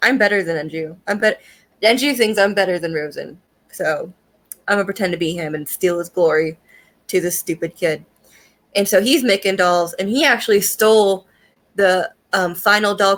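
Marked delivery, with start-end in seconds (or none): none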